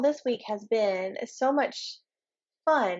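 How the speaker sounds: slow, sarcastic, ironic enthusiasm. Answering a friend's question about the week: sarcastic. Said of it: "I say that sarcastically".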